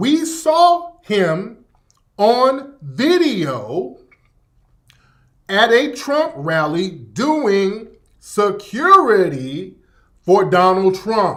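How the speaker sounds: very slow, deliberate, word-by-word delivery. Urging listeners to use logic, speaker announces he will talk very slow. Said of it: "I'm going to talk very slow".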